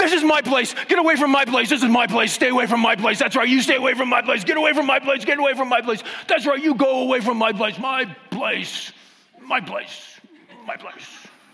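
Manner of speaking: very high, loud, barking guard-dog voice. Speaker acts out a dog at the edge of its property, dog impersonation. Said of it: "How's my dog impersonation?".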